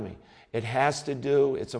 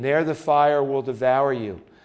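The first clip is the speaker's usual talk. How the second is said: ordinary talk, nothing marked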